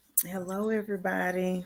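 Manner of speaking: drowsy voice. Greeting everyone on stage after being up early: sleepy voice. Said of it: "You got that sleepy voice".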